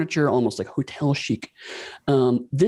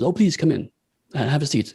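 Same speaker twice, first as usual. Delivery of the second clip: put-on French accent; 2 semitones higher than usual. Voicing a character greeting visitors into an office: French accent. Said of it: "with a, uh, French accent says".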